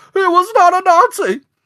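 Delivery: goofy, very high, loud, drawn-out voice. Imitating Patch protesting while getting in the car: Patch's high goofy voice. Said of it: "his voice gets really high and goofy".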